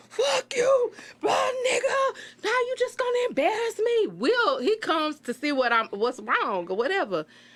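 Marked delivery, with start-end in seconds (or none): 0.2-4.1 very high, furious, lost-it screaming fit. Retelling losing it at a man in front of her friends, retelling her own screaming. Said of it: "I'm screaming like".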